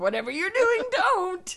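put-on very high, odd little old lady voice. Retelling warning off a hooded man in the driveway: imitating a weird grandma scolding. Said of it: "I turned into a weird grandma".

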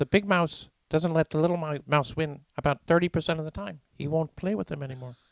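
put-on Canadian lecturer voice. Explaining a point about mice and winning: Jordan Peterson impression.

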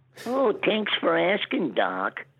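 very high, sing-song, swooping cartoon rabbit voice. Answering the retold question as Bugs Bunny: Bugs Bunny voice.

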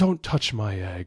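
mock regal queen voice, slowed. Speaker demonstrating echo reading from a Wings of Fire graphic novel, Queen Coral voice. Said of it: "how do you think Queen Coral would say this line".

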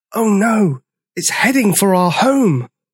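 said on a sharp gasp. A character watches a burning river flow through the forest, gasping. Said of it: "gasped Sizo".

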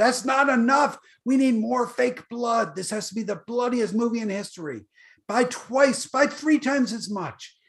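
high, hollered, screamed-out voice. Retelling how someone screamed about buying more fake blood: imitating someone screaming. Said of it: "he screamed at me".

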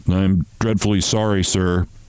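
plain

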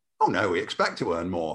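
low, sheepish, embarrassed voice.

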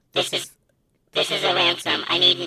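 alien-sounding voice. Doing a mock ransom call, the speaker uses an alien voice. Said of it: "How you sound, alien?".

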